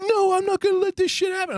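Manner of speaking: put-on shrill, high-pitched screaming out. Describing a video of a man at the bottom of some stairs, retelling a scream. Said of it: "he's screaming out to him".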